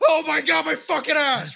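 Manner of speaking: play-acted screaming cry, very high. Retelling how someone reacted while it happened: imitating someone screaming. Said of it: "He was screaming the whole time".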